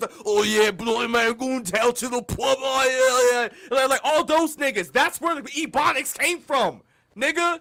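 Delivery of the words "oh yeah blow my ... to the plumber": put-on Cockney accent, higher and louder. Explaining where a way of talking came from, imitating a Cockney accent.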